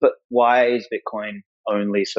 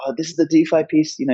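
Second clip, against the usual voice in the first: put-on squirrel voice, pitched higher; 6 semitones higher than usual. Speaker recalls Alan pushing a piece for him to read; Alan's little squirrel accent. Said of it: "in his little squirrel accent".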